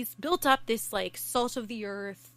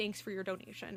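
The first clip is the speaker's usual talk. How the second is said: sneering, dry, ironic, sarcastic delivery; 8 dB quieter than usual. Retelling how a politician answered a protester: imitating a sarcastic remark. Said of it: "Trudeau sarcastically says".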